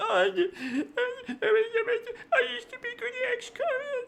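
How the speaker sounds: put-on sad, mopey voice, very high, very drawn out. Streamer shows how they answer when chat bullies them; put-on really sad voice. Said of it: "start talking in like this really sad voice".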